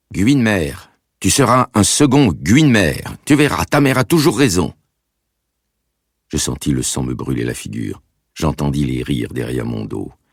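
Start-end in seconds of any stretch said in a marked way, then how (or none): 0.1-4.7 put-on strong Russian accent, very high, exclaiming loudly. Reading a mother exclaiming to her son in public: strong Russian accent. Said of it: "avec un fort accent russe".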